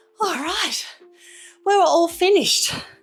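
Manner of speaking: huffing and puffing. Leading a workout, just finishing the last set, huffing and puffing. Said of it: "I'm huffing and puffing here".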